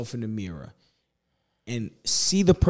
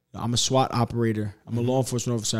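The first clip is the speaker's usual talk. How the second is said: ordinary talk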